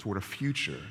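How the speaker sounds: ordinary delivery, nothing marked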